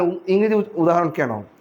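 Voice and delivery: ordinary talk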